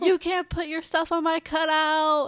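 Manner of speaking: loud, high-pitched, scolding-toned yelling. Retelling how a man came over to the students: imitating someone yelling. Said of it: "starts yelling at us".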